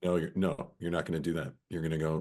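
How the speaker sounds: firm, stern, no-nonsense dad voice. Showing how the speaker's dad tells a child off: imitating a no-nonsense dad voice. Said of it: "it's like dad voice".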